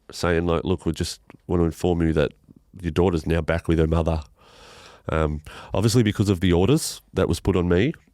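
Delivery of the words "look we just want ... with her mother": normal talking voice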